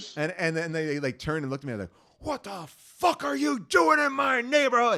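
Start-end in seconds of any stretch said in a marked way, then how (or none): 2.2-5.0 put-on very high, shrill, aggressive, confrontational scream. Retelling yelling at people from a second-floor window, retelling his own screaming. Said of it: "And I started screaming".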